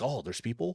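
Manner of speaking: put-on, eager, bursting excitement. Voicing Sophie reacting to a raid arriving: voicing Sophie all excited. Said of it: "She's all excited. She's like".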